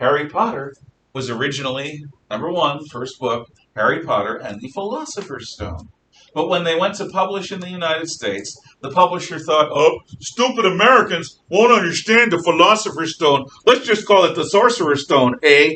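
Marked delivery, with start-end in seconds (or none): 9.7-15.8 very loud, high, put-on Canadian accent. Voicing the us publisher's thoughts on the title, in a canadian accent. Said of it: "which is why I just gave you a Canadian accent".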